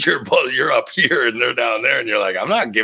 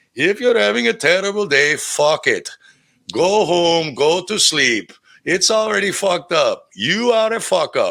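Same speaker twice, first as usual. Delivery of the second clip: joking put-on Indian accent, pitched high; 7 semitones higher than usual. Retelling a funny video of a man joking like a guru: imitating an Indian accent. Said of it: "He does an Indian accent".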